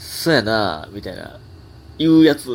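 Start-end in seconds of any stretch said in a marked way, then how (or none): 0.0-0.9 deliberately aloof, affected cool-sounding delivery. Imitating someone who deliberately acts cool to seem funny, put-on affected cool tone. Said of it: "おもろいと思って、あえてすかしてますの言い方で".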